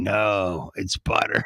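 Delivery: low, deep, demonic devil voice. Speaker acts out a commercial's voices, doing a deep devil voice. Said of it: "this deep devil voice here go".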